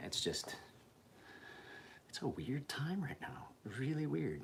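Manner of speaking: hushed, quiet, kept-down talking. Talking while the wife and kid are still asleep, talking quietly. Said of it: "I know I'm talking quiet".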